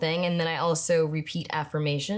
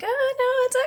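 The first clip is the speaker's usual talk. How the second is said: very high, raised, ungrounded voice; 5 dB louder than usual. Showing how the voice sounds when not grounded: higher register. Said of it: "I kinda go up into this higher register".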